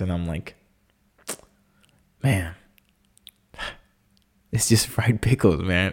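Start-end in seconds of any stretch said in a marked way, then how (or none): 2.2-5.9 tearful, welling-up, teary voice. On a podcast, admitting they cried over fried pickles: tearing up. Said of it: "I'm already tearing up again".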